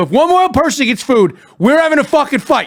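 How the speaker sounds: put-on angry, menacing tone. At a wedding where others keep getting food, retelling an angry threat. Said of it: "And I go".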